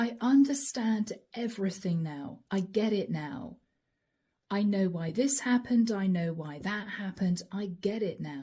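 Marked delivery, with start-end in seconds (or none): none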